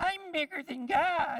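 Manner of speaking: very high, loud, shrill squeaky devil voice. Speaking to a group about God, voicing the devil in a squeaky devil voice. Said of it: "the devil squeaks over in the corner".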